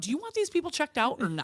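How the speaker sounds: put-on sassy tone. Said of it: "super sassy to the lady".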